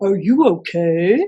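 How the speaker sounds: talking like a puppy. Speaker shows what the puppy in a picture might say: puppy voice. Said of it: "Let me hear your best puppy voice".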